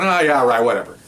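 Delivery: ordinary delivery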